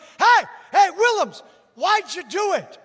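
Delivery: high-pitched, loud yell. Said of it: "Somebody from the crowd yells out".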